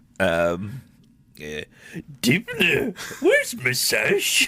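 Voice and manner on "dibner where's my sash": very high, slow, stretched-out swooping voice. Doing an impression on request of a sitcom character: Uncle Andy voice. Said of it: "give me an Uncle Andy first".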